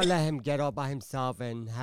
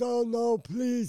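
acted, high-pitched, tearful, sobbing pleading; 11 semitones higher, 3 dB louder than usual. Retelling a man's plea while held at knifepoint, imitating him crying and begging. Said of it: "He's crying and all this shit".

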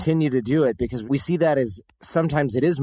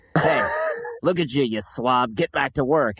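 put-on mean, nasty old grandpa voice. Acting out the inner critic as a scolding voice: nasty grandpa voice. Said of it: "like your nasty grandpa who's like".

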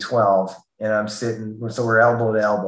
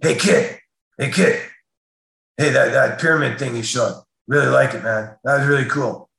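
rough, gruff put-on voice, higher; 3 semitones higher than usual. Retelling a man shaking his hand at the session's end, in a gruff voice. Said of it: "in this real gruff kind of voice".

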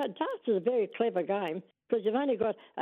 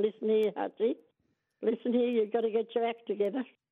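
ordinary talk

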